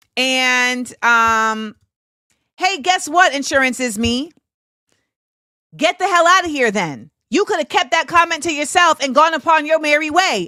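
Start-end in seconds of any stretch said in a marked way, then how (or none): 2.6-10.5 quick, high-pitched shout. Speaker addressing someone who left a comment, yelling. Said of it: "And now I'm yelling at you".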